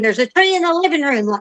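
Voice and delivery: play-acted, light, mild alarmed scream. Retelling how a man on the porch screamed after a tornado, imitating someone screaming. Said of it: "he's screaming".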